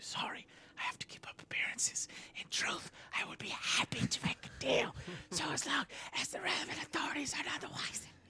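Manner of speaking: low, hushed, confiding whisper. Voicing a merchant who leans in to make a secret deal: lowered voice, speaking quietly. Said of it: "Flint lowers his voice and leans toward you".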